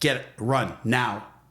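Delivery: slow, commanding, authoritative voice. Speaker retells what they told her, in that get-out-now command voice. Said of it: "I said to her in that voice".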